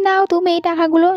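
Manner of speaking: usual speaking voice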